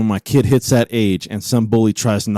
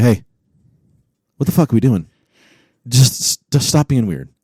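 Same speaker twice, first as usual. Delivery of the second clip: real, dead-serious, stern scolding tone. Teasing a dog owner about how he talks to his dogs, mock-serious scolding. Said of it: "look at them like real serious and go".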